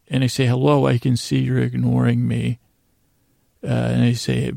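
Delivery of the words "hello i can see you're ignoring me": plain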